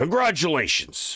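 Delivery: rough military voice. A narrator voices a decorated lady soldier congratulating a new Spelljammer Academy recruit: gruff voice. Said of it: "she speaks in a rather gruff voice for a lady soldier".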